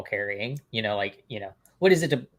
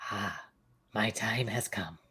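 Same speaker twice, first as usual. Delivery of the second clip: very slow, drawn out, lingering word by word; 3 semitones lower, 8 dB quieter than usual. Joking that a guest is done after one speech, doing Oogway. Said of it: "he's just like Oogway".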